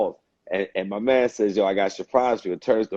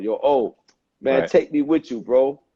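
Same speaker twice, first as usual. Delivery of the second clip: put-on playful, joking, almost childlike pleading tone; 4 semitones higher than usual. Retelling a young man's words after an interview: imitating someone joking like a kid. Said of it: "he said it jokingly, like a kid almost".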